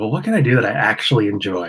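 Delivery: ordinary talk, nothing marked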